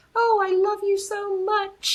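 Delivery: put-on very high, slow, drawn-out childish voice. Describing an actor in a movie, the speaker does a Lord Farquaad impression. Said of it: "how I do Peppa Pig for my kid".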